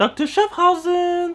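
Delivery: very high mocking tone, rising up like a question. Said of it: "who talks like that?".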